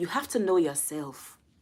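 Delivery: put-on speaking with Nigerian accent. Quoting a woman whose phrasing the speaker loved, in a Nigerian accent. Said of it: "that's my best Nigerian accent".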